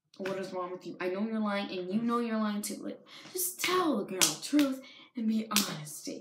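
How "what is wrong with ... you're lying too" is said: ordinary talk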